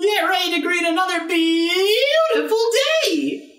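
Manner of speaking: very high, stretched, drawn-out scream. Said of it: "'Cause I can hear the scream".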